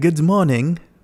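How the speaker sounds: put-on high, loud German-Swiss accent. Joking about someone hovering over your bed: Klaus Schwab German-Swiss accent. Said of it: "what's his accent? You guys got that, like, that German Swiss".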